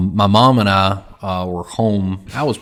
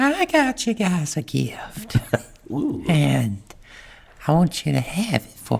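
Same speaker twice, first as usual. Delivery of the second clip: goofy put-on woman's voice, high and swooping; 8 semitones higher, 5 dB quieter than usual. Retelling a neighbor coming over with a gift, doing an impression of the neighbor. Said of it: "That's more Adam Sandler".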